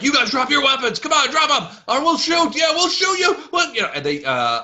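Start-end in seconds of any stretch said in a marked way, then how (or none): 0.0-3.9 shrill, very high-pitched, loud yelling. Voicing archers ordering the party to drop weapons: archers yelling. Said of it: "start yelling".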